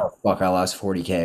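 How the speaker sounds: ordinary delivery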